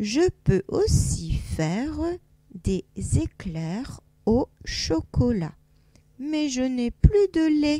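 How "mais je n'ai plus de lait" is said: exclamatory tune gently lifting toward lait. Showing how an exclamation mark changes reading: raised exclamatory intonation. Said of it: "il y a un point d'exclamation, donc je monte un peu l'intonation".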